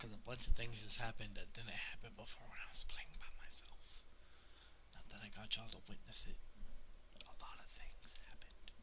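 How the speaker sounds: whispered.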